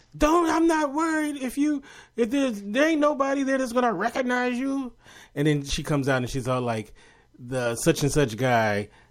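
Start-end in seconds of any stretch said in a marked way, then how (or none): 0.2-4.9 very high-pitched, shouted yell. Telling a friend a favorite movie line, imitating a yelling character. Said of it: "he's always yelling through this whole movie".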